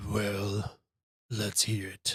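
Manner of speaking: deep, gruff, beastly bear voice. Retelling a game, the speaker voices the shifter across the circle in a deep, gruff, bear-like voice. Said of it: "deep, gruff, bear-like voice say".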